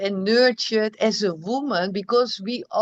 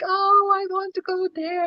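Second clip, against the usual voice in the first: mock weepy, high, sobbing, tearful crying voice; 9 semitones higher than usual. The speaker retells how friends, lying there after labor, were crying, imitating someone crying. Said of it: "they were crying like".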